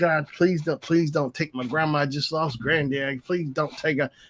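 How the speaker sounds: desperate, pleading, begging tone. Retelling praying outside the hospital for grandma: re-enacting pleading to god. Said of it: "I pleaded to God, I said".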